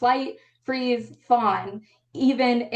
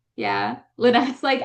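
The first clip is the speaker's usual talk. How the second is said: normal talking voice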